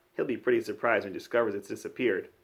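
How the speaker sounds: ordinary delivery, nothing marked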